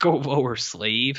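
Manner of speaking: put-on cheeky, sassy little delivery. Retelling a scene where a character lowers his hand: imitating a sassy character. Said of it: "Man, that's sassy".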